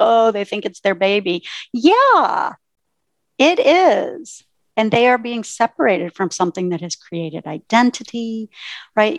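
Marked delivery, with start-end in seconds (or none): 0.0-1.4 put-on, mocking, scoffing, dismissive delivery. Speaker quotes people who mock owners calling their business their baby, mockingly. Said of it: "I hear people say that mockingly".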